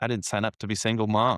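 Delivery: normal talking voice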